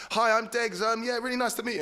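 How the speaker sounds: put-on, awkward, embarrassed, squeaky, very high voice. Retelling going over to say hi after several drinks: retelling an embarrassed greeting. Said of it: "and just embarrassing myself".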